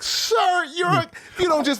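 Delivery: put-on shocked exclamation. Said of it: "It's like".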